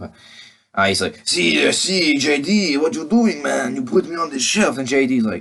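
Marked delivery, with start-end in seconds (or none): 1.3-4.8 put-on Russian accent, much higher and slower. Voicing a character who addresses JD, in a Russian accent. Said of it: "I don't know why I'm doing a Russian accent".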